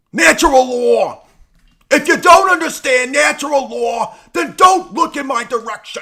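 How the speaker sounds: shrill, booming, very high and very loud. Noting everybody always wants it, the speaker does a Mark Passio impression. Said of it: "Do a Mark Pazio".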